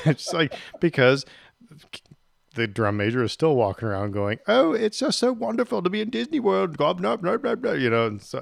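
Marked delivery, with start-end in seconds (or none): 4.5-6.8 very high-pitched, poor put-on English accent. Retelling what a drum major kept saying during a parade, in a bad English accent. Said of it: "my English accent sucks".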